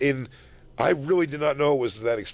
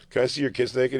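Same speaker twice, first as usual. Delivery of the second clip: normal talking voice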